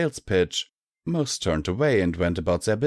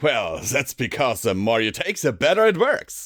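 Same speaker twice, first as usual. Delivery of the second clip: cheerful, hearty good humour, rising pitch; 4 semitones higher than usual. Reading a story, the salesman answers a customer's question: hearty good cheer. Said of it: "replied Flim with hearty good cheer".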